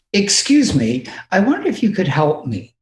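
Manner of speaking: best-effort put-on English accent. Giving an example of asking for help at an American airport, in your best English accent. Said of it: "with my best English accent".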